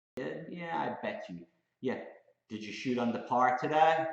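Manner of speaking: high, snide, sarcastic tone of mocking disbelief. Acting out a sarcastic reply to someone's trading win: imitating a sarcastic taunt. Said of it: "that's a sarcastic bitch slap".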